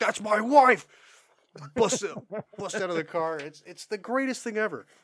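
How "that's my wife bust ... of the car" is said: loud, hard, yelling outburst. Retelling a man screaming in a place for a minute and a half, imitating Taffer yelling.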